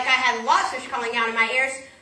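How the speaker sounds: plain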